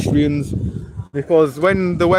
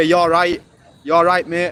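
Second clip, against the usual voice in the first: put-on proper broad Yorkshire accent. Speaker imitating how people in Rochdale greet you, broad Yorkshire accent. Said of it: "like proper broad".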